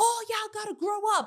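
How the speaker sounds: put-on, shrill, very high, hyped-up yell. Retelling how someone got hype and started yelling: imitating Rolly yelling. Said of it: "starts yelling".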